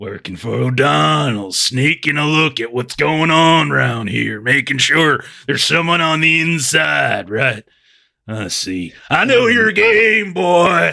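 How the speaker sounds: put-on heavily drunk, rambling speech. Voicing a character who tells McLeod to get out of his face: acting drunk. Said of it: "he's totally drunk".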